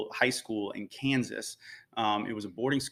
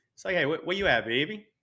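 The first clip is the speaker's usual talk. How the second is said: natural native accent, pitched up; 6 semitones higher, 3 dB louder than usual. Asked to improvise a phrase, showing off own accent. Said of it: "let's hear this accent".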